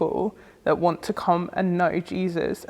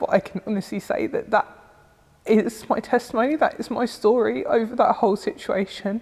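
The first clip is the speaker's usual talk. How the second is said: voice breaking while crying, tearful; 3 semitones higher than usual. Speaker shares a personal testimony about praying for comfort: crying. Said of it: "I'm crying now".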